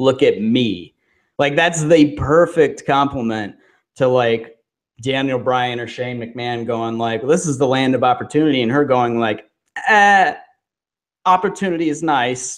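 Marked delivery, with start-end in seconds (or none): 9.9-12.6 bad put-on Australian accent, pitched up. Quoting a woman's reply, the speaker tries an accent: awful aussie accent. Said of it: "an awful Aussie accent".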